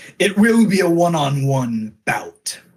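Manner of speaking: booming, resounding voice that fills the room. A narrator voices a hooded figure at the head of the table, booming voice. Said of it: "There's a booming voice".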